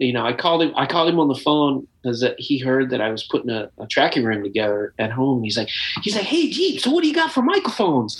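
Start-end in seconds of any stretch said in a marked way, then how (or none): 6.0-8.2 put-on, much higher, real high-pitched voice. Retelling a phone call from a man who calls him jeep, real high-pitched voice. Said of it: "he's got this real high pitched voice".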